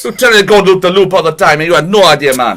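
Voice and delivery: improvised, put-on Jamaican accent. Told to continue the story, carry on speaking in a jamaican accent. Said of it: "Continue this in a Jamaican accent".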